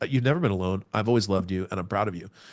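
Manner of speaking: ordinary talk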